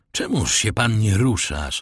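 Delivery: ordinary delivery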